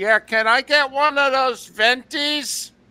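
loud, very high-pitched put-on old man voice. Ordering coffee she texted for, the speaker plays himself in a very old-sounding guy voice. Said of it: "I'm one of those very old-sounding guys".

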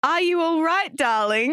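put-on English accent. Quoting her mum speaking into the darkness, in an English accent. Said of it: "Why is [name]'s mum English?".

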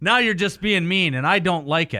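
ordinary talk

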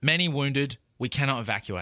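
ordinary delivery

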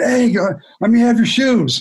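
high, hollering, calling-out shout. Retelling a player running up the steps to a departing star: imitating someone screaming. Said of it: "So he's screaming".

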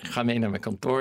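ordinary talk

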